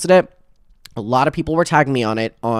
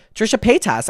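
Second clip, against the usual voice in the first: name rattled off very fast and pitched up; 7 semitones higher than usual. Showing how the name has to be said: said really sped up. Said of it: "I feel like I have to say it really sped up".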